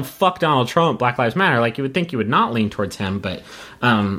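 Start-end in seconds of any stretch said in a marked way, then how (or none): none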